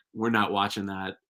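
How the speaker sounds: normal talking voice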